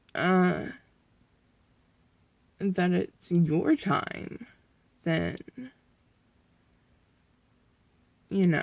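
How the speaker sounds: tearful voice, crying a little. Talking to the camera about possibly reaching the end, crying a little. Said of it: "I am crying a little".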